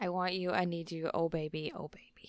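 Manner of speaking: mock passionate tone. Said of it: "How many times do I say that to you in that tone?".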